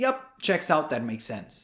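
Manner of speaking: ordinary talk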